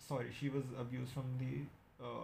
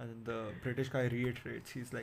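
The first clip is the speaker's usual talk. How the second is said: usual speaking voice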